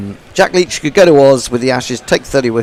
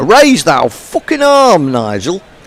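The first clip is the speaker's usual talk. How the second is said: put-on Yorkshire accent, pitched higher; 6 semitones higher, 3 dB louder than usual. Quoting what Jago says to Nigel in Jago's put-on Yorkshire accent. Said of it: "was that a good Yorkshire accent?".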